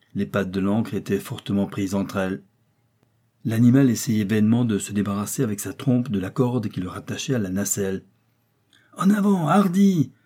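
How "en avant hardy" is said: overjoyed cry, pitched very high. Joey urges the elephant onward, crying out with joy. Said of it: "s'écria Joey au comble de la joie".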